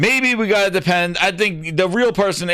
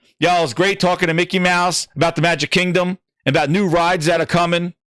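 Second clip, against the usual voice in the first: ordinary delivery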